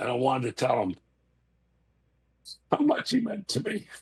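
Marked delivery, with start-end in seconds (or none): 2.7-3.9 high, cracking voice breaking with tears. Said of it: "I'm sorry for crying".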